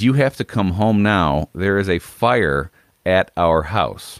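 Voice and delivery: ordinary talk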